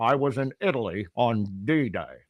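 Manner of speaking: put-on very slow, unhurried veteran old radio broadcaster voice. Impersonating an old radio man recalling the war: Harl Barnett radio voice impression. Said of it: "This is my impersonation of Harl".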